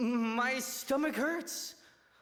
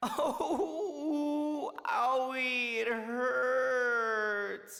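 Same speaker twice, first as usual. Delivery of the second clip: terrible, hammy faked sounds of pain. A character collapses, faking a stomach ache, with terrible fake pain. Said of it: "he's going for Atsuma being a terrible faker".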